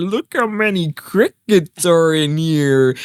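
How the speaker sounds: all-excited, gushing, drawn-out exclaiming. Retelling what she said lifting the crickets: imitating her excitement. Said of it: "kinda get all excited".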